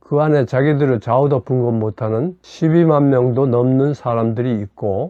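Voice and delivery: ordinary talk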